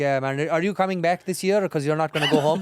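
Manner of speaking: put-on Indian accent, male voice. Playing along with a friend's bit in front of a girl, in a put-on indian accent. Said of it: "in that Indian accent that we do".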